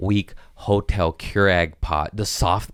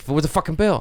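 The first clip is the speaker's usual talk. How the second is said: put-on tweaky, frantic voice, pitched higher; 9 semitones higher than usual. Retelling demanding the bill from a server: imitating own tweaky frantic self. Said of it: "I turned into the tweaky guy".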